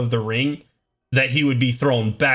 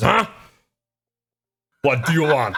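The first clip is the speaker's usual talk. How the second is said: voice of a big orc creature. Voicing an orc who is approached by a player: orc voice. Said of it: "large orc creature. He says".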